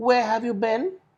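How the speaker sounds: question-like rise to a high note on been. Teaching question intonation, demonstrating a rising pitch on 'been'. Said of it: "Been is on a high note".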